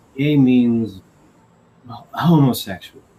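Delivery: very nervous, anxious, uneasy delivery. Retelling how his mom explained a word: imitating someone speaking nervously. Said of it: "she very nervously goes to me and says".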